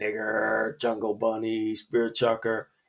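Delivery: soft mutter, under the breath. Retelling slurs a classmate said: imitating someone muttering under breath. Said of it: "he would say under his breath".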